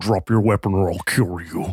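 altered, masked, disguised voice-changer voice. Getting really close to his ear: voice-changer disguised voice. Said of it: "in my best like voice mod changer thing I could do".

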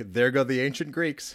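ordinary delivery

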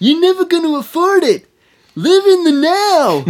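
very high, loud, squealing, blaring movie-character voice. Acting out a film character looking at a guitar: impression of a film character. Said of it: "Good impression".

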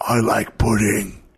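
harsh, throaty, guttural outburst. A narrator voicing someone behind a player leaping from a plane, guttural voice. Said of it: "you hear a guttural voice from behind exclaim".

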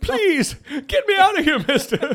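very high, shrill, loud, drawn-out, slow pleading. Recalling the nursing-home scene from Happy Gilmore: imitating the Happy Gilmore old lady. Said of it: "you know that Mister Mister lady? Uh, I think I just killed her".

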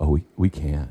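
fake, a little choked-up voice. Showing how he answers people asking if he and his wife can have kids, acting choked up. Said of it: "A little choked up".

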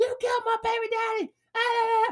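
very high, anguished, wailing scream. Retelling a video where a woman screams at a cop: imitating a woman screaming. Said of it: "you could just hear her screaming".

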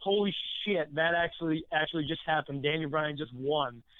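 plain

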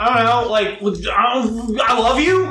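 panicked, freaking out. Voicing a character meeting the artist he admires: freaking out. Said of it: "very clearly, like, freaking out".

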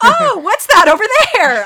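very high, very loud call. In a tabletop game, Baleen tries to distract someone, raised voice. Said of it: "raise her voice and kind of say".

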